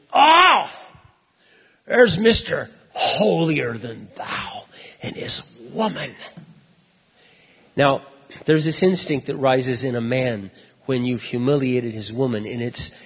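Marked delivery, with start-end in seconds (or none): 0.1-6.1 mock, very slow, loud, drawn-out drunken shout. Speaker retells a drunk man calling out across the room at him, imitating a drunk man shouting. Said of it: "he shouts out over the whole room".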